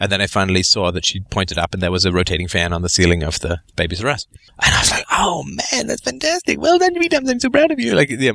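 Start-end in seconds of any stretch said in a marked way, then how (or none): 5.1-7.9 mock gushing enthusiasm, voice very high. Retelling praise for someone who finally said the word fan: imitating own enthusiastic praise. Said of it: "my voice goes up, and I get really enthusiastic".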